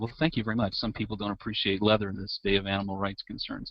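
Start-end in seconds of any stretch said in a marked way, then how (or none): none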